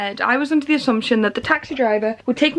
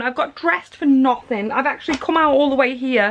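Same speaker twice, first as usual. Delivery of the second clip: ordinary delivery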